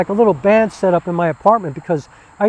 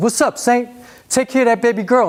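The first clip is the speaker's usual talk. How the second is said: put-on big, loud, booming Brooklyn accent; 4 semitones higher than usual. Retelling how three men greet the speaker one afternoon, in a booming Brooklyn voice. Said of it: "booming Brooklyn voices".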